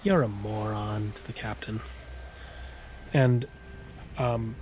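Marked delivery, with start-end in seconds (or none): 0.0-1.1 oni voice growling, then melting into a giggle. The narrator voices the Oni insulting the captain: growling then giggling. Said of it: "the Oni kind of growls and then giggles".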